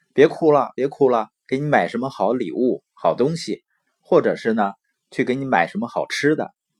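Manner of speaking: ordinary delivery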